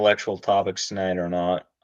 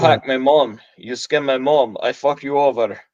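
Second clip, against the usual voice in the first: raised, fake put-on Russian accent; 4 semitones higher, 6 dB louder than usual. Mimicking a caller who pretends to be someone else while phoning a company, to retell the story. Imitating a fake Russian accent. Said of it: "pretends to be some Russian hacker".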